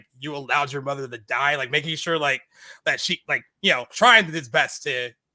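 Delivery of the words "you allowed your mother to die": ordinary talk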